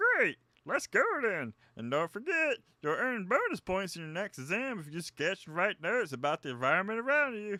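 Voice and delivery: dopey voice. Voicing a character giving the group instructions: derpy voice. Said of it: "I'm just gonna give him a derpy voice".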